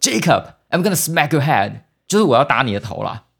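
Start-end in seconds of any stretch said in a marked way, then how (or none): 0.0-1.7 mock loud roaring yell. Speaker retells a boy shouting at his brother jacob, retelling a loud roar. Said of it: "大声的咆哮说".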